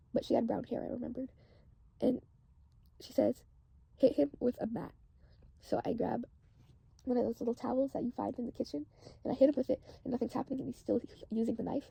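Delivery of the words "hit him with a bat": ordinary talk, nothing marked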